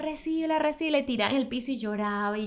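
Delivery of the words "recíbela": screaming, shouted, pitched much higher. Recounting an hour of crying in a church parking lot, re-enact it: retelling one's own screaming. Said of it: "y yo le gritaba".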